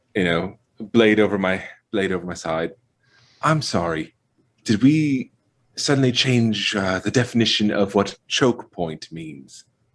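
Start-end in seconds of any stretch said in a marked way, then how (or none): 3.4-9.7 whispering, complaining, hushed grumbling. Moving toward the group and speaking in character: whispering, complaining. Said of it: "sort of whispering, complaining".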